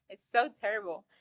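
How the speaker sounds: ordinary talk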